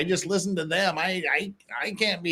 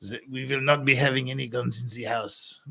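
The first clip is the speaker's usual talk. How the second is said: put-on French accent, lower; 5 semitones lower than usual. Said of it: "it sounds pretty damn French to me".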